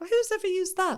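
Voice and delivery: high, put-on scoffing disbelief. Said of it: "I'd be like".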